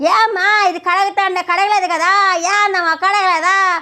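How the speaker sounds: high, loud mock shout.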